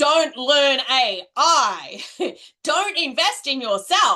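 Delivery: forceful put-on voice. Voicing the comfort zone as a strong inner voice: really strong voice. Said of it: "maybe it's a really strong voice".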